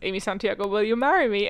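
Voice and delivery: ordinary talk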